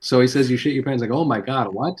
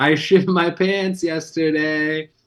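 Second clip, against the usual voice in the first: high, pitched up and louder; 5 semitones higher than usual. Recalling repeating a line when the boom guy asked: retelling saying it louder. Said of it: "say it again louder".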